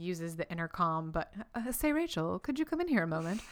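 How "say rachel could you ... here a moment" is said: offhand, casual everything-is-fine tone, higher pitched. Retelling Chandler calling Rachel in over the intercom: Chandler acting like nothing's wrong. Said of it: "acting like nothing's wrong".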